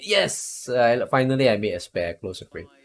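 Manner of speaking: ordinary talk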